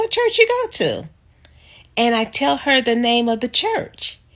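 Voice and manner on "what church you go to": very high, shrill, full-volume voice. Retelling what a woman said in a cell phone store, imitating her loudest voice. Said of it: "in her loudest voice".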